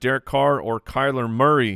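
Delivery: normal talking voice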